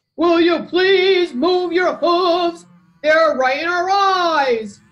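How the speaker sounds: mooing cow voice, "eyes" drawn out. Narrator reading an animal story, voicing the cows' line by mooing. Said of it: "mooed the cows".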